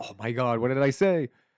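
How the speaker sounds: loud, high, excited triumphant shout, belted out.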